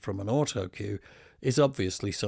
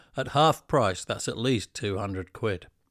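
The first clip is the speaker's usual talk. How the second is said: ordinary delivery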